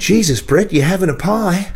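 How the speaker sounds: put-on high Australian accent. Retelling what he said to Brett about his pie on tour: mock Australian accent. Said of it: "Like this, in this mock Australian accent".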